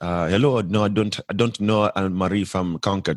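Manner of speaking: put-on heavy, strong, thick Nigerian accent. Retelling a phone call, quoting the man who answered in a thick Nigerian accent. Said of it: "he has like a really thick Nigerian accent".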